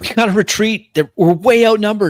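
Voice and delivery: shrill, very loud, high-pitched yell. Calling to the party mid-fight to retreat: yelling to everyone. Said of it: "I yell out to everyone".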